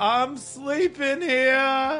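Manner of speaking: weary New York voice, very high pitched. In a comedy bit about screaming on the street, playing a tired New York guy. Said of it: "That's a good character, tired New York guy".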